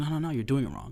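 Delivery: ordinary delivery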